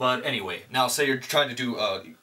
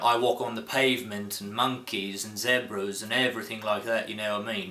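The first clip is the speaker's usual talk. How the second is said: casual, chatty put-on British accent. Demonstrating how to get started on a British accent, speak in a British accent. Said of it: "I say that to get started on my British accent".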